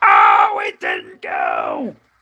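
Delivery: bad announcer voice, very low, very slow, growled, swooping. Replaying a hockey save, doing a horrible Doc Emrick impression. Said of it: "That was a horrible impression".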